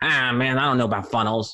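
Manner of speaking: dim, dopey, clueless, stupid-sounding guy voice. Retelling what a realtor replied about marketing, in a stupid voice. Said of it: "I'm gonna make a stupid voice because this is what he sounded like".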